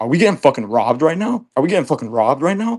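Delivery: fast, alarmed, panicked outburst. Speaker retells thinking they were being robbed when his girlfriend walked in, retelling a panicked outburst. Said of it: "my brain trips out".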